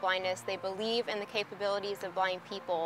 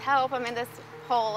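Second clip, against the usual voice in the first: usual speaking voice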